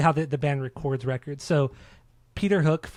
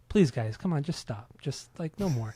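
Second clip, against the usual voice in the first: dry, soft, courteous and polite tone; 5 dB quieter than usual. Retelling how the record's producer asked the band to stop: imitating a polite soft-spoken request. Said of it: "he would just politely say".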